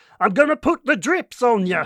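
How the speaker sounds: put-on Scandinavian accent. Recalling a joke he once made, using a Scandinavian accent. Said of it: "using like that Scandinavian accent".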